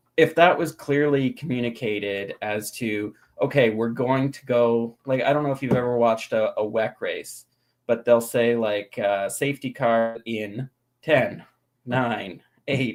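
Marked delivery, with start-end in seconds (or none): 9.3-13.0 slow robotic computer announcer voice. Explaining how a race counts down to the safety car, computer voice. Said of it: "in this computer voice".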